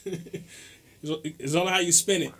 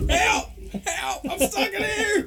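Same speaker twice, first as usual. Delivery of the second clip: acted cries, very high, very slow, drawn out. Acting out someone stuck in a dressing room: mock yelling for help. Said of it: "How long were you yelling?".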